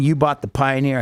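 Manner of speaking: normal talking voice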